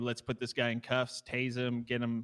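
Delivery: ordinary delivery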